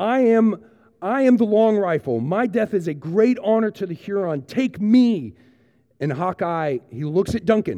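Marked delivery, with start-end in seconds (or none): 0.0-5.3 deliberate, high, drawn-out acted-out yell. Retelling a scene where Cora is being taken away, retelling Cora yelling. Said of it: "Cora just starts yelling".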